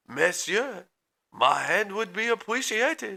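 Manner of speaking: high, put-on French accent. Two people trade accents; one speaks in a fake French accent. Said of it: "That was pretty good".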